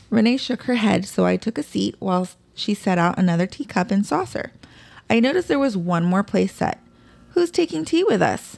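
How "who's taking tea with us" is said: bright, cheery, very high cheerful voice. Noticing an extra place set, the narrator asks the child cheerfully. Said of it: "I asked cheerfully".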